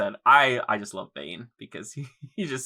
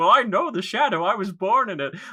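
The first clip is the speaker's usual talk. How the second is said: put-on very high squeaky spoof voice; 10 semitones higher, 4 dB louder than usual. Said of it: "like Bane from The Dark Knight".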